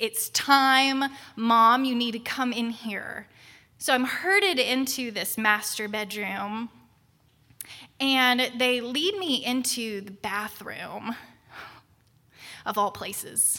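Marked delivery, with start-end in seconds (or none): none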